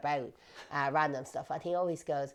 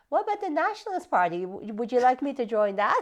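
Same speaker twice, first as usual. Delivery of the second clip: mocking, sarcastic, pitched-up tone; 8 semitones higher, 6 dB louder than usual. Retelling his reply to a man listing parties to join: retelling a sarcastic remark. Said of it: "sarcastically went".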